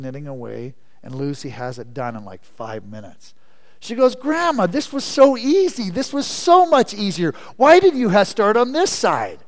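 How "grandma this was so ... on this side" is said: mock thrilled excited gush, very high and very loud. Telling a story, quoting a girl talking to her grandma, acting all excited. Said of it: "And she's all excited".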